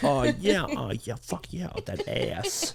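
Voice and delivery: gangster-like New York voice. Imitating a guy who talks during sex: gangstery New York guy voice.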